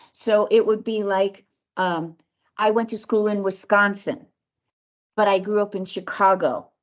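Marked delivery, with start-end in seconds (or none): 2.6-6.7 downward inflection at phrase ends. Coaching someone on how to speak, demonstrating downward inflection at phrase ends. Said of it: "put a downward inflection at".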